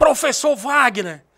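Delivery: very loud, high-pitched, intimidating shout. Recounting a man at the bank shouting his name, retelling an intimidating shout. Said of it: "E um grito assim, era intimidador o grito".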